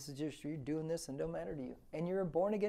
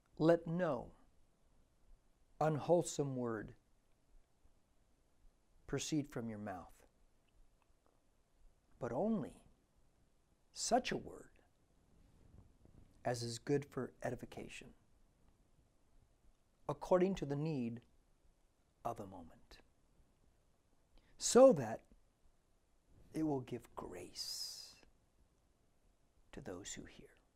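very slow, deliberate, measured delivery; 4 semitones lower than usual. Finishing with one last bible verse, read aloud to listeners: very slow, deliberate. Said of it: "We're going to read it very slowly, very deliberately".

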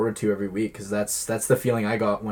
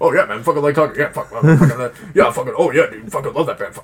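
very loud, fast, high-pitched, rushed, dominating ramble; 5 semitones higher, 11 dB louder than usual. Imitating Trevor, who likes talking and would dominate the conversation: Trevor impression. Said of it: "Trevor impression".

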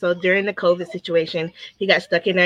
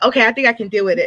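normal talking voice

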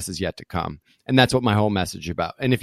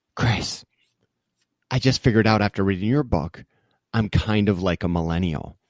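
put-on whispered delivery. Retelling what was whispered at breakfast: imitating Mike whispering. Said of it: "he whispers to me".

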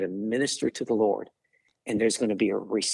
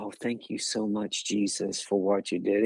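put-on reverent gratitude, slower. Speaker describing how the healed man didn't just thank reverently, imitating reverent thanks. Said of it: "He didn't come just reverent".

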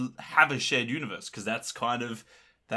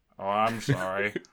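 dry deadpan put-on voice, pitched lower; 4 semitones lower than usual. Imagining a different actor in the comedy role: dry Alan Rickman delivery. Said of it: "his delivery would just be, like, so dry".

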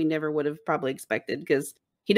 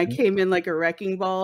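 ordinary talk

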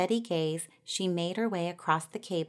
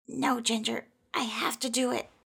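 high mumble through gritted teeth; 5 semitones higher than usual. Kindness, a mouse struggling with a leap, refuses Ginger's help, mumbling through gritted teeth. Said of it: "through gritted teeth, Kindness mumbled".

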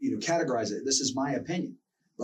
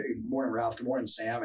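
ordinary talk

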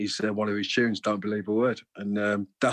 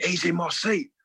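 play-acted, pitched-up, bellowed shout; 9 semitones higher than usual. Retelling a concert where a man on the steps claimed his seat, retelling a shout. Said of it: "he's shouting".

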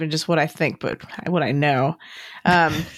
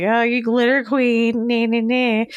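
high, drawn-out, snide, mocking sarcasm; 6 semitones higher than usual. Recounting what someone said to a woman he tried to frame: retelling a sarcastic remark. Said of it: "thought it was a little sarcastic".

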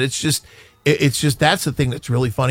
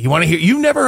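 gleeful voice, higher pitch; 5 semitones higher, 3 dB louder than usual. Retelling offering a client the story of getting back together: imitating own gleeful voice. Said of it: "with glee in my voice".

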